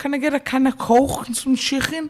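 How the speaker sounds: very high-pitched Liverpool Scouse accent. Asked to give his best liverpool accent: liverpool accent. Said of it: "could you give us like your best Liverpool accent".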